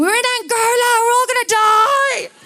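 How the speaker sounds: very high, shrill scream with "die" drawn out. Retelling what the speaker's dad cried out in a crocodile-infested river; retelling dad's screaming. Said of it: "My dad was just screaming".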